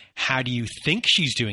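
mock, snide, condescending sarcasm, fast. Acting out how someone asked a rhetorical question about her, mock-condescending. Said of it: "very condescending, like the sarcasm of questions".

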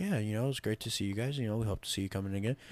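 friendly, fake-polite customer-service voice. Retelling own talk with a family: imitating own proper customer-service voice. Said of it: "It's like".

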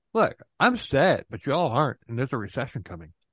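ordinary talk

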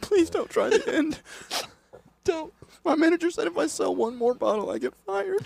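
very high, fake blubbering sobs. Imagining a shop clerk begging not to sell the hot sauce: mock crying shop clerk. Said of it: "And he just starts crying".

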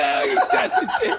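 high, wide-swinging, mock gushing voice.

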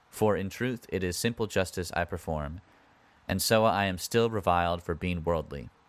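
plain

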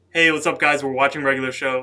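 full volume, speaking loudly. Showing viewers how she usually talks, at full volume. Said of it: "this is me talking at full volume".

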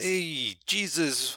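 heavy, exaggerated New York accent. Imitating an actor's film role as Judas: Harvey Keitel's Judas, thick New York accent. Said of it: "he's got a thick New York accent".

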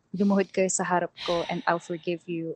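ordinary talk, nothing marked

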